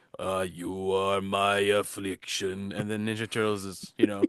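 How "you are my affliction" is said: very slow, throaty villain drawl. Describing how someone's voice sounds; imitating a throaty voice. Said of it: "like his voice is like".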